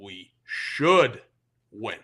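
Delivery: should stressed hard and pitched low. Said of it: "Key emphasis on the word should".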